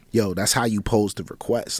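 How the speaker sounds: usual speaking voice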